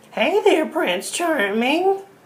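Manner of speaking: witchy voice pitched very high. Demonstrating an attractive princess greeting Prince Charming while speaking like a witch. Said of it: "speaking like a witch".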